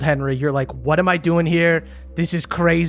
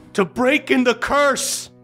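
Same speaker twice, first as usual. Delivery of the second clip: put-on urgent old man voice, higher pitch; 8 semitones higher than usual. Voicing an old man pleading with Henry not to die: old man speaking urgently. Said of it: "you hear the old man speaking to you urgently".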